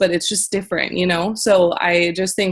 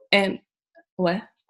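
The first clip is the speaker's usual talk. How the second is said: usual speaking voice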